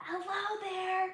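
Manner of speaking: soft half-whispered voice, a bit high. Greeting viewers while editing photos in Photoshop: half-whispering. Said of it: "I'm trying to whisper".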